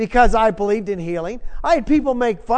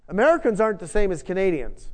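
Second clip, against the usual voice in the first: usual speaking voice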